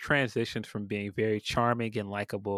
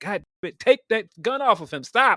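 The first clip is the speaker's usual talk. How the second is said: very loud, high, mock exasperated frustrated shout; 12 semitones higher, 8 dB louder than usual. Retelling the same scene as the pleading turns to frustration: imitating a frustrated demand. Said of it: "you could feel the frustration where he's like".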